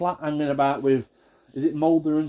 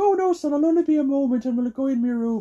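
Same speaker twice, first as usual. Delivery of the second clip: really bad put-on Irish accent, pitched up; 11 semitones higher than usual. Retelling what his nan said to him, in a really bad Irish accent. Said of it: "I always have to do a really bad Irish accent".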